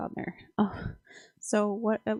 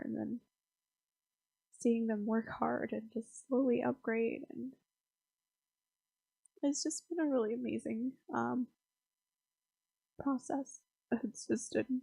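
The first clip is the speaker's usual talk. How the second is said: tearful, much quieter; 7 dB quieter than usual. Speaker talking at two a.m. about watching others work hard, crying. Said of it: "I'm sorry, I'm crying".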